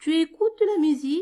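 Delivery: question tune rising at end on musique. Showing the spoken french yes-no question, rising intonation at the end. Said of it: "l'intonation de la voix montante".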